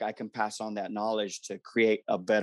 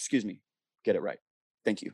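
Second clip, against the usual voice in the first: firm, strict, no-nonsense stern dad voice. Showing how he corrects someone without blowing up: firm, stern dad voice. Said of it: "like firm, stern dad voice".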